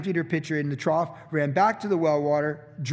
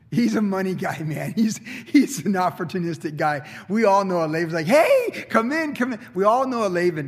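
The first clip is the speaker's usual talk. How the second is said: words broken up by laughing throughout. Reading about laban, unable to talk about him without laughing while talking. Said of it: "I can't even really talk about it without laughing".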